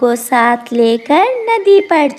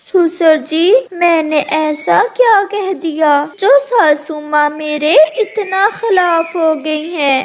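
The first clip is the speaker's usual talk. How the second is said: high, tearful, weeping voice; 5 semitones higher than usual. A cartoon crow daughter-in-law, having just heard the news, asks her father-in-law; crying. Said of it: "परंतु [name] की बहू [name] कव्वी को नींद कहाँ आ रही थी। / ये सब सुनकर [name] की बहू रोने लग जाती है। / ये सब सुनकर [name] की बहू रोने लग जाती है।".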